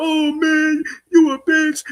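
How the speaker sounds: mock blubbering, tearful, high, whiny crying voice. Retelling how a man reacted to being insulted: imitating him crying. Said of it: "He start crying like".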